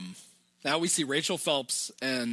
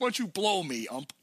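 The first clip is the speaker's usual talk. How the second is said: put-on yell, higher pitch; 5 semitones higher than usual. Speaker retells a man being carried off the field yelling at the umpire, retelling a yell at the ump. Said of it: "Grabs himself and yells".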